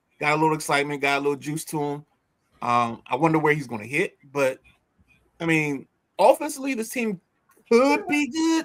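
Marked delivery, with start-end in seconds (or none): 6.2-8.7 voice pushed very high in pitch. Talking about a team, remarks on it in a high-pitched voice. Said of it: "I say that with a high pitched voice".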